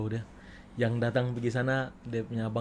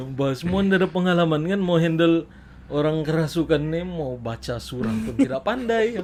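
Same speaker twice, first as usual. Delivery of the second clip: ordinary delivery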